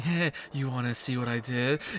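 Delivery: very low, very quiet, sultry laughing speech. Mocking how badly written characters talk after revealing something crazy: sultry, laughing talk. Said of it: "kind of sultry, kind of laughing".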